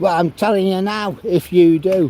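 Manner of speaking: brash, raucous, high-pitched bellow. Quoting a woman who objects to being filmed, in a raucous bellow. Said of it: "She bellows out the most raucous voice you've ever heard".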